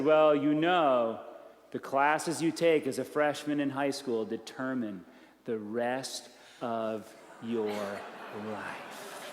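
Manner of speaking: grave, weighty, very serious tone, very low, deep and slow. Retelling what they told a family unsure about classes, in a put-on very serious voice. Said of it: "I got a very serious voice".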